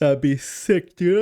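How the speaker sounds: talking through a yawn. Mid-discussion about Howard Stark, the speaker is yawning while talking. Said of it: "I'm so sorry. I'm yawning".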